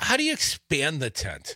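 ordinary delivery

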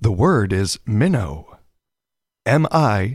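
drawn-out game show announcer voice. A host announces the word listeners text to win a contest, in a game show announcer voice. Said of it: "my inner game show voice".

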